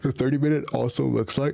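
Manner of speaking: words stretched out while talking through a yawn. Explaining a trade setup based on his system, yawning while talking. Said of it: "sorry for, for my yawning".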